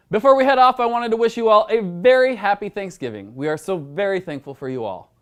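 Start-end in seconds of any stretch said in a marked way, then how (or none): 3.3-5.0 low, mildly, faintly sarcastic tone. Host signing off the news episode, slightly sarcastic-sounding. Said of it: "That sounded probably a little sarcastic".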